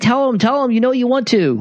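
very high, urging yell. Retelling yelling at the screen during a scene: imitating yelling at the screen. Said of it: "yelling at the screen going".

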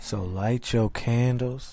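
silky smooth voice. Opening the R&B podcast bit as the co-host urges him on, in a smooth voice. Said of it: "I gotta get smooth voice on him".

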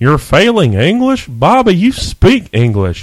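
high, swooping, slow, drawn-out character voice. Doing a requested impression of a King of the Hill character. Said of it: "Do your favorite character from King of the Hill".

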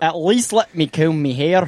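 put-on Scottish accent. Retelling a quote from someone who could only do a Scottish accent: Scottish accent. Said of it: "he could only do the Scottish accent".

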